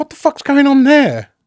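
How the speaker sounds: high, loud, bewildered outburst. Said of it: "I went".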